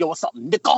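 strange way of speaking. Retelling how an actress from Star Trek said a word: imitating a weird way of saying it.

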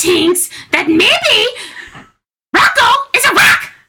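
very high put-on character voice. Playing a game of character impressions, describing a movie, in an Elmo voice. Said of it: "You have a good Elmo".

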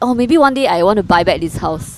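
normal talking voice

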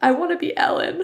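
put-on acted tearful sniffling. Retelling answering her question while crying on the sidewalk, retelling own sniffling. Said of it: "I'm like sniffling on the sidewalk".

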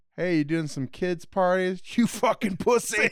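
put-on angry voice. Fan quotes Calendar Man's line to Polka Dot Man, mock-angry Calendar Man taunt. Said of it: "he's just so mad about it".

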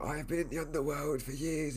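dark, sinister villain voice. Describing an actor playing a dark villain, quoting him in a Voldemort-like voice. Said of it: "he was in a similar voice going like him".

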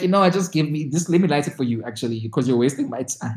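ordinary delivery

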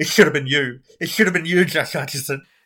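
loud, high, furious sobbing through tears. Teasing someone, imagining them watching Bridge of Terabithia: mock furious crying. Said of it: "sitting there crying furiously".

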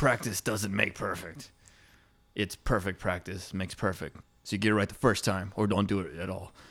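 lecturing, teacherly, instructive delivery. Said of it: "And he was like".

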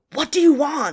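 shrill, very loud, high-pitched, menacing scary scream. Retelling a woman screaming at a stranger: imitating a deep scary scream. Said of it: "in a super deep, deep, like, the deepest, scariest voice".

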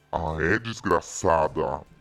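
very low, deep demonic voice. Speaker retells his reaction to a friend who disinvited him, in a demon voice. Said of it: "Com essa voz de demônio mesmo".

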